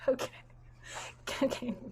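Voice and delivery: talking through laughter. Reacting to the chat while asking for one more person, laughing while talking. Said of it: "I'm just laughing at the chat".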